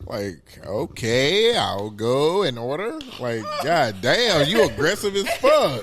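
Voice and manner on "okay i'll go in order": put-on, timid, meek, very slow delivery. Retelling a reply to a rude fast food worker: imitating a meek reply. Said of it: "It make you turn into a bitch".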